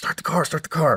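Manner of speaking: urgent, high-pitched call. Retelling running to the car, yelling at a friend: retelling a yell. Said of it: "I'm yelling at my friend".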